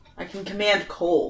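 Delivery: plain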